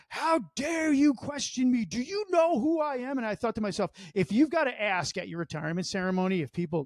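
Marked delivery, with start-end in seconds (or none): 0.1-3.1 mock high, drawn-out top-of-the-lungs screaming. Acting out how she went at her commanders for questioning her, imitating someone screaming. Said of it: "She's screaming at the top of her lungs".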